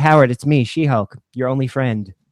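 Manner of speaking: flat deadpan. Recalling a favorite scene, quoting She-Hulk in total deadpan. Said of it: "total deadpan".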